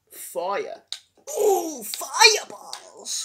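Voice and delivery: high, swooping cartoon-creature voice. A speaker does a Yoshi cartoon impression, as from the Mario cartoons. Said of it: "That was my Yoshi impression".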